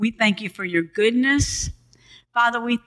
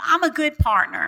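firm, convinced, meant with conviction; 5 semitones higher than usual. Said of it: "Say it like you mean it".

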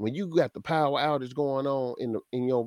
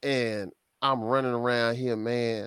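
usual speaking voice

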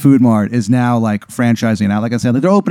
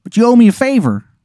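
clumsy, bad Baltimore twang pitched very high; 11 semitones higher than usual. Playing a character offering a favor: bad Baltimore accent. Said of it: "he doesn't know how to do the accent".

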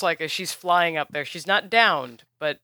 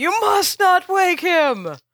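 very high, loud shrieking scream; 12 semitones higher, 7 dB louder than usual. A flying character swoops down at you, screaming. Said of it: "she flies down screaming".

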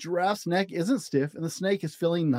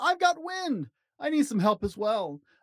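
high-pitched, storybook-style shout; 8 semitones higher than usual. Narrator reads Gorilla calling out to Dr. Duck; shouted. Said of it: "Gorilla shouted".

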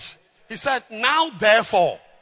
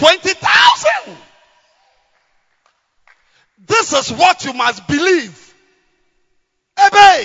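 shouting, much louder and higher; 9 semitones higher, 9 dB louder than usual. Working out a sum aloud for listeners, then shouting. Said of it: "Forgive me for shouting".

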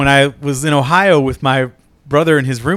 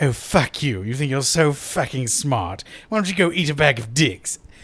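put-on British accent, quieter; 7 dB quieter than usual. Recalling how Filthy talked to the roommates, Filthy's British accent. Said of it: "me just doing the British accent".

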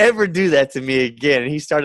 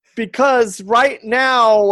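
pitched-up, hesitant, stalling filler talk; 10 semitones higher, 4 dB louder than usual. Retelling stalling for time at the mic: retelling stalling for time. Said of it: "I'm just stalling for time".

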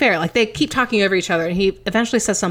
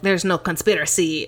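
bad, terrible fake Dutch accent; 3 semitones lower than usual. Speaker quoting a guy from a debate, in a terrible Dutch accent. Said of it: "I'm doing a terrible Dutch accent".

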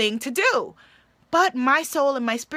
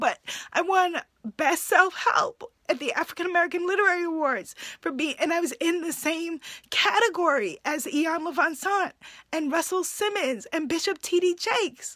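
tearful, pitched-up voice on the verge of tears; 6 semitones higher, 4 dB quieter than usual. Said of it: "I don't know why I'm getting teary talking about it now".

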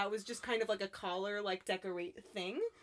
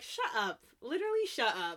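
ordinary talk

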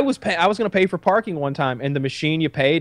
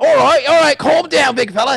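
loud, high-pitched, raised coaxing call; 10 semitones higher, 7 dB louder than usual. Retelling a sketch where Steve Irwin ties up a man: imitating Steve Irwin. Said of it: "Steve Irwin".

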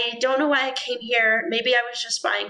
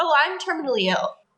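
put-on breezy, very casual, offhand tone; 4 semitones higher than usual. Recounting how she broke the news to the group, imitating a very casual remark. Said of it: "She's very casually like".

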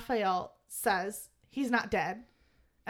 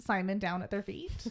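ordinary talk, nothing marked

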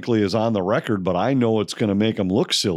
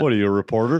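acted deadpan delivery. Retelling another man's quip to a reporter, deadpan. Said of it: "he looked at you deadpan".

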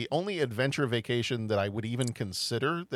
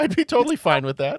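very high, loud, squeaky, insistent voice; 10 semitones higher, 10 dB louder than usual. Insisting they could handle going into a volcano crater: very high-pitched voice. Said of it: "my voice is getting very high pitched".

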